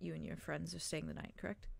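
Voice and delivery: low, hushed mutter under the breath. Voicing a character who leans in close to a player: said under his breath. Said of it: "he says it under his breath".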